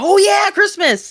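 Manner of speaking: overexcited, very high-pitched voice. Remembering the topic after being reminded: overexcited. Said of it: "That sounded way too excited".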